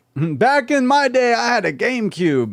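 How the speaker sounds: very high, slow, put-on old man voice. Joking about how old people talk, in old man grandpa voice. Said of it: "my old man grandpa voice".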